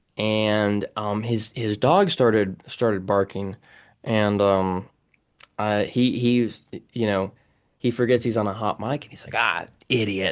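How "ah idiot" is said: mock angry voice, put-on anger. Retelling a man on a hot mic in a Zoom interview, imitating a man mad at his dog. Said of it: "he gets he gets mad at his dog".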